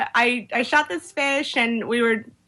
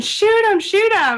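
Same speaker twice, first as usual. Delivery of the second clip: put-on shrill, very high-pitched shriek; 10 semitones higher, 4 dB louder than usual. Retelling a spearfishing moment, yelling at a buddy to shoot: retelling own screaming.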